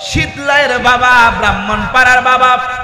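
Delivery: fervent preacher-style outcry.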